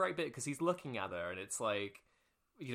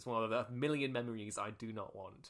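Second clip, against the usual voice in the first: ordinary talk, nothing marked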